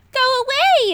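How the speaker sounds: loud, very high, squeaky little dragon voice. Narrator voicing a small dragon who has just been spotted, squeaky voice. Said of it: "it squeaked".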